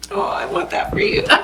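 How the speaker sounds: hushed, choked-up, teary, moved whisper. Guest responds to the host and is suddenly touched, emotional. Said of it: "I was not expecting this reaction".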